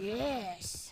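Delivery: soft mimicking "yes". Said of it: "That's me trying to say yes like you".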